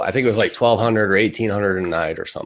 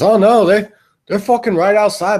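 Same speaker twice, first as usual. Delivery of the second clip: put-on Irish accent, much higher, louder, slower; 12 semitones higher, 6 dB louder than usual. Retelling what Dave said coming in at bedtime, imitating Dave's Irish accent. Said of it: "this fucking Irish accent".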